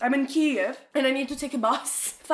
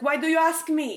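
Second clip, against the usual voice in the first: put-on mean, rude voice, higher; 3 semitones higher than usual. Retelling a clerk's reply about lost baggage: imitating a mean clerk. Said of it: "I forgot how mean people are".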